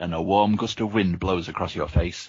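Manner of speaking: ordinary delivery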